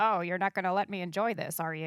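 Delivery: put-on deadpan, flat delivery. Retelling a reply to a reporter's question: imitating a deadpan reply. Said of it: "and he just deadpanned".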